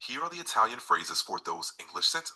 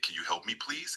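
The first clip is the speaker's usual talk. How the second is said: ordinary delivery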